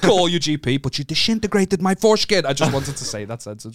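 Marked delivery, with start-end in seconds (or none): 0.0-2.5 loud, high, half-baked put-on Italian accent. Quoting a man who kept saying to contact your GP: put-on Italian accent. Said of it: "When did he become like fucking Italian?".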